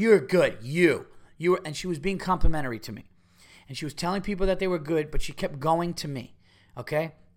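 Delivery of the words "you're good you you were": mock drunk woman, loud and rambling. Retelling a drunk fan's compliments after a show: imitating a drunk woman. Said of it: "this drunk fuck".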